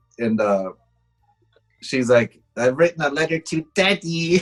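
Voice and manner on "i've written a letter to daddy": put-on tiny munchkin voice, higher. Retelling a movie scene that creeped the speaker out: imitating a little munchkin voice. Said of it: "She says it with this little munchkin voice".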